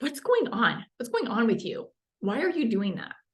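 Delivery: critical, scolding tone with swooping pitch. Showing how a question's tone can sound, as a critical finger-wagging mom. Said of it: "this finger wagging mom".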